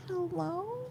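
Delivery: high, very soft cat voice. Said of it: "he just quietly goes".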